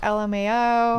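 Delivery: ordinary talk, nothing marked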